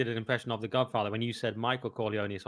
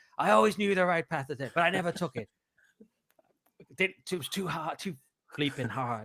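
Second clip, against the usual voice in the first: pitched-up, big-screen dramatic speech delivery; 5 semitones higher than usual. Quoting one of his best speeches from Scent of a Woman, imitating the Scent of a Woman speech. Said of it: "he goes like".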